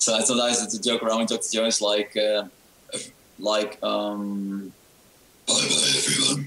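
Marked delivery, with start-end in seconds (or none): 5.5-6.5 put-on really evil villain voice. Demonstrating the joke voice sometimes used on the show: really evil voice. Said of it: "I can do sometimes really evil voice".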